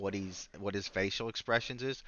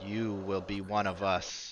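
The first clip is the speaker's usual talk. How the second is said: flat, slow, mechanical, robotic machine-like voice. Narrating a scene to players, voicing a figure that speaks, mechanical voice. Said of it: "he says in a kind of mechanical voice".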